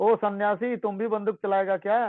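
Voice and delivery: ordinary talk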